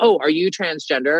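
plain

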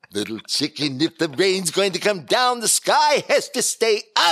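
very high, loud, swooping comic voice. Voicing a wizard character who addresses Little Chicken: Phil Silvers impression. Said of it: "Doing a Phil Silvers impression".

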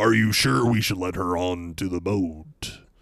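put-on dramatic game announcer voice. Imitating a movie character who sounded like a game announcer: Soul Calibur II announcer voice. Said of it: "doing the Soul Calibur two announcer voice".

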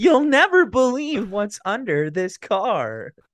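very high, loud, app-style text-to-speech voice. After another speaker says they sound like it, imitating the TikTok text-to-speech voice. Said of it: "You sound like the TikTok auto voice".

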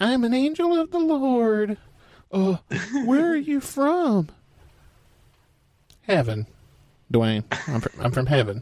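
high-pitched angel voice. Host, after asking for a high pitch, voicing an angel of the Lord. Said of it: "Give me a high pitch".

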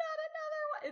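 mock lament, cried out very high.

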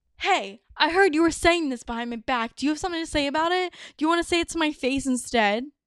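arrogant, confrontational, cocky and fast. Demonstrating how to confront a friend who talked behind your back: cocky. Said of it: "let's start off with a cocky example".

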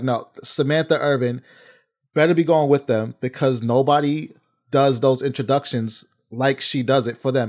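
normal talking voice

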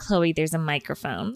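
ordinary talk, nothing marked

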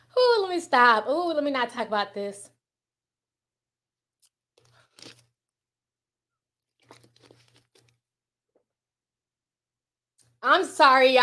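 emotional, choked up, fighting back tears. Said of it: "I didn't mean to get all emotional".

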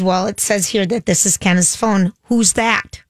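usual speaking voice

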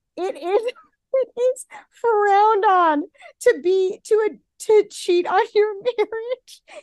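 high talk broken up by laughter. Reading out a quote to another speaker, laughing while talking. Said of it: "sorry, I'm laughing".

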